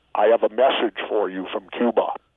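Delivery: plain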